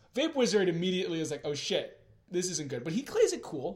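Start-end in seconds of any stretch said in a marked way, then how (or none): none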